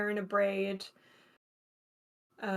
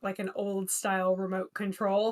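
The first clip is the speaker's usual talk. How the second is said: plain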